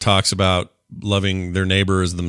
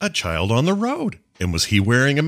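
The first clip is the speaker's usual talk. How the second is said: animated, high, swooping up-and-down character voice; 5 semitones higher than usual. Doing a Tucker Carlson impression for the others: Tucker Carlson impression. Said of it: "I'm just doing my Tucker Carlson impression".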